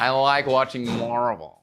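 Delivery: put-on fake American accent. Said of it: "Can you say it like an American?".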